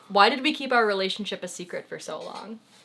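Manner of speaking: plain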